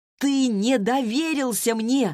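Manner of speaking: shouting. Narrator reading her own reply in an argument, yelling back. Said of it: "заорала я в ответ".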